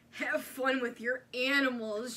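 acted-out sneering, snide, mocking tone. Retelling what a woman said after getting a dirty look, mocking a snide remark. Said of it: "she said snidely".

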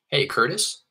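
"Curtis" said with a high rising tune. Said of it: "ask it with an upward inflection".

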